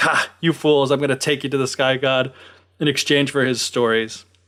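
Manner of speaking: ordinary talk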